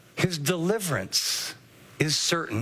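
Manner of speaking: deliverance hit hard, then a pause before is certain. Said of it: "Underline the word deliverance".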